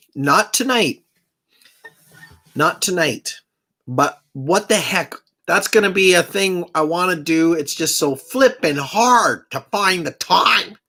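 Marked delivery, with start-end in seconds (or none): 7.6-10.7 exasperated, upset, frustrated little outburst. Talking about not finding time for a plan: upset. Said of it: "I got a little upset there".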